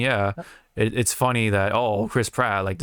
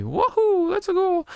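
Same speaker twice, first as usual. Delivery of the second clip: very high, cartoony video-game character voice. Discussing whether Mario should speak whole monologues in a movie, Mario voice impression. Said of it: "fucking Mario speak a f- full monologue in that voice".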